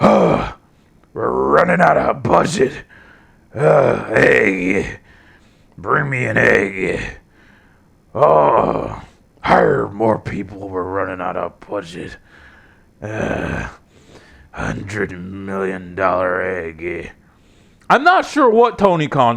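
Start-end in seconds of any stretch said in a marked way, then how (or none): 0.0-17.1 very low, slow, creaky voice, dragged out. Joking about budget cuts, putting on a Vince McMahon voice. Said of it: "project Vince McMahon's voice onto Tony Khan".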